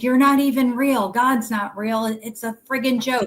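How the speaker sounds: scornful, heated, angry yelling outburst. Retelling words once yelled at god: imitating own past angry yelling. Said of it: "I would yell".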